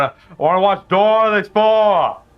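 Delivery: put-on high Boston accent. Joking about kids' show titles, imagining a Bostonian asking for Dora: Boston accent. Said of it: "some kind of Bostonian going".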